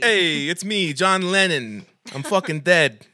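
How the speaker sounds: put-on Italian accent. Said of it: "making them Italian".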